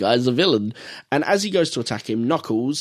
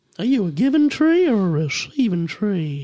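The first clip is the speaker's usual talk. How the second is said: put-on creepy, high old man voice; 8 semitones higher than usual. Showing a character that people find funny: Herbert the Pervert impression. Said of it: "I will give you a better Herbert the Pervert".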